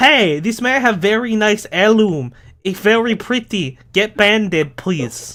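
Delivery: high-pitched, loud shouting. Game master voicing a woman yelling up at her husband: yelling. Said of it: "While she's yelling up at her husband like".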